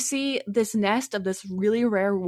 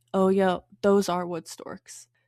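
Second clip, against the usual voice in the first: mock disappointed tone; 3 semitones lower than usual. Retelling a birder's reply on seeing the storks: imitating someone sounding disappointed. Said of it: "She sounded so disappointed".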